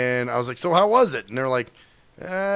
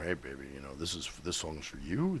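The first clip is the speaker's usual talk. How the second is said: deep, very low, hushed, smooth DJ murmur; 11 semitones lower, 16 dB quieter than usual. A friend asks for some quiet storm radio talk, and the speaker obliges: quiet storm DJ voice. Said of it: "Do do some quiet storm shit for me".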